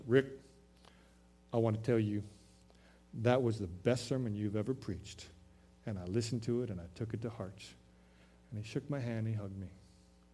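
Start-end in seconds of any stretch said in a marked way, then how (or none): 0.1-5.2 put-on very low voice, much lower pitch. After a funeral, a man thanks the speaker for the sermon, very low voice. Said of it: "in his very low voice".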